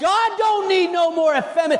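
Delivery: loud preacher-style shout.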